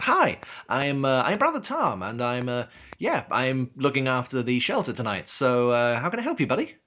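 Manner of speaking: swooping, forced, over-bright put-on cheerful friendliness. Voicing Brother Tom greeting a stranger at the shelter: forced happy face. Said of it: "slaps on a happy face and goes".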